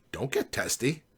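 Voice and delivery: condescending, patronizing, talking-down tone. Narrator answers Ed's outburst in the car, in a condescending voice. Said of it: "I started to say in a condescending voice".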